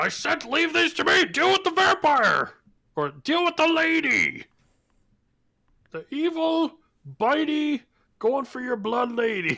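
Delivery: very high, furious, swooping, raging battle shout. In a game, Echo stabs at a wounded wolf and yells to allies: Echo raging. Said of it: "but I'm I'm going reckless because I'm raging".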